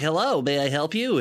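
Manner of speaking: put-on dopey hipster voice. Retelling a trailer scene, Lucius Fox greeting her: dopey Lucius Fox impression. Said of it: "he's a dopey little hipster boy".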